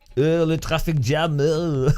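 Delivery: put-on French accent. Joking about complaining about an update: put-on french accent. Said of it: "I'm Parisian".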